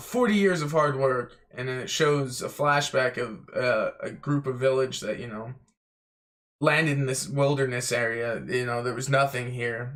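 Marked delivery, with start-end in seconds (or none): 0.0-1.3 light, mild, token shout. Retelling a scene where the mayor yells at the others: imitating someone yelling. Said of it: "Boodle just yells".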